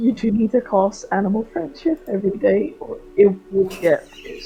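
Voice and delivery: quiet whisper. A player's character pulls Raina aside to tell her something, whispering. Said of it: "I just wanna whisper to her".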